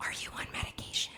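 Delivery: hushed, very soft, barely voiced whisper. Retelling what the speaker's mother whispered when they were alone in the room, whispering. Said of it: "I whispered into the microphone".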